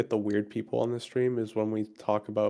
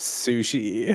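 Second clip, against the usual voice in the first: imitated disgusted tone. Imitating the other speaker's answer about sushi: imitating disgust. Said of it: "I heard the disgust in your voice".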